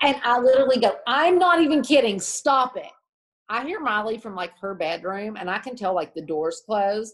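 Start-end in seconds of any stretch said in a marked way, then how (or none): 1.1-2.9 mock, insistent, fed-up yell, loud and high-pitched. A mom retelling telling others to stop trying to scare her, retelling a yell. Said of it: "Mom, why are you yelling?".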